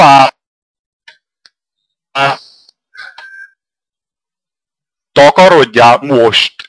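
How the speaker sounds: agitated, worked-up, angry dismissal with swooping pitch. In a heated argument, dismissing the other person, angry and agitated. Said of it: "Majd ha megnyugodtál talán akkor".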